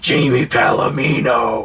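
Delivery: eerie, weird demonic voice. Imitating how she repeats people's names when introduced, in a weird demon voice. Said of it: "she does it in like a demon voice".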